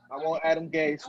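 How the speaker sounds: usual speaking voice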